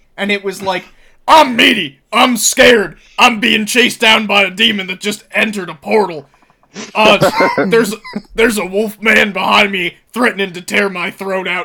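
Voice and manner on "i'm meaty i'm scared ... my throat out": put-on ranting radio host voice, higher and louder. Replaying an earlier joke, pretending to be stuck at a haunted ranch: Alex Jones impression. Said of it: "pretending that I was, uh, Alex Jones".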